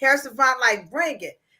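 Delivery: plain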